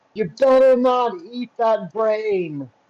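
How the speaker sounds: high-pitched shout projected at a distance. In a role-play game, a character leaving the room, yelling. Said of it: "she's gonna yell".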